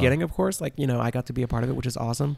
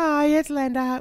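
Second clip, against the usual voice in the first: very high put-on voice, not her own. The speaker shows the voice she used when calling: put-on higher voice. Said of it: "Like that's not normally how I sound".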